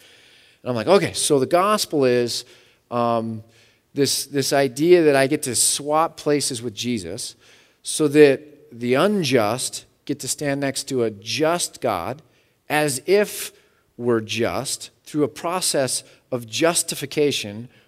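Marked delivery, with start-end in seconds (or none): none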